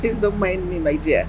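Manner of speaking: amused, chuckling through the words. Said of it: "Mother, why are you laughing?".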